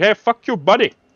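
put-on Indian English accent. Mocking how a real Indian would react, in an imitated Indian accent. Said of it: "If it was a real Indian, he'd be like".

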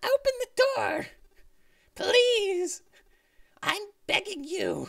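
very high, slow, drawn-out squeaky voice. Voicing a trapped character begging for the door to open: squeaky character voice. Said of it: "this squeaky character ... do his voice".

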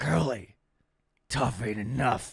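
very slow, deliberate, drawn-out delivery. Doing a movie quote for a guessing game: movie quote impression. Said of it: "It's a pretty good impression".

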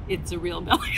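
usual speaking voice

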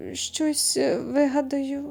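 uneasy, awkward mumble. Reading a story aloud, the narrator voices a man's reply with an awkward mumble. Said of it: "ніяково промимрив він".

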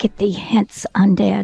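quiet mumbling under the breath. Wandris, holding his holy symbol, turns undead, quietly mumbling to himself. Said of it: "He quietly to himself mumbles".

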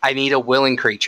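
ordinary delivery

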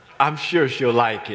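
mock sarcastic tone of voice. A man retells what the checkout lady said about his gift, retelling a sarcastic remark. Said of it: "I didn't even hear her sarcasm".

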